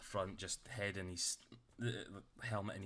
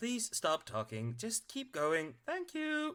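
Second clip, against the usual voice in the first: very high, swooping little robot gnome voice; 4 dB louder than usual. A small robot auto-gnome responds to a screaming man, robot voice. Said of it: "that's the best robot voice I've ever heard".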